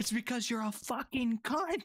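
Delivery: mock shrieking scream, pitched very high. Retelling a phone call where Johnny yells back at the woman: retelling Johnny's scream. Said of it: "He's screaming".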